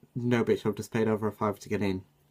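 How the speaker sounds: ordinary talk, nothing marked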